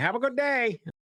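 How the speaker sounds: high, sunny, friendly chirpy voice with Boston accent.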